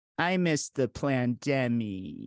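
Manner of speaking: put-on childlike voice, very slow. Doing an imitation of a six-year-old introvert pandemic truther: imitating a six-year-old. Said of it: "here's my imitation of, of a six-year-old".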